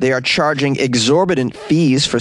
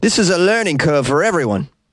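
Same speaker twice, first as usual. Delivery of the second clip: put-on pretty good, solid Australian accent; 4 semitones higher than usual. Quoting Ray McGibbon, Ray McGibbon Australian accent. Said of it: "a pretty good Australian accent that was".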